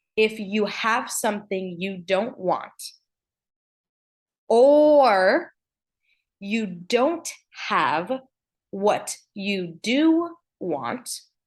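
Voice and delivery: slow, deliberate, drawn-out "or". Speaker addresses viewers, slowing down so the point lands: speaking slower. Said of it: "I'm speaking slower because I want this to land".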